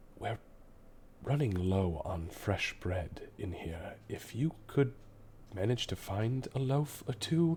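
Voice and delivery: quiet, hushed whisper. A character glances behind her and speaks out the door: whispering. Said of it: "she kind of whispers out the door".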